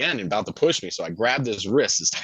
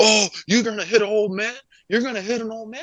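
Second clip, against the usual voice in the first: very high, frantic, freaked-out outburst; 11 semitones higher than usual. Retelling a fight, imitating a man freaking out. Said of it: "he starts freaking out".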